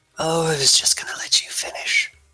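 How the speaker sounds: rasping, scratchy throat voice. A game master voices an unseen figure interrupting the players, in a raspy voice. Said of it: "you hear in a raspy voice".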